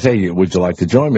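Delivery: ordinary talk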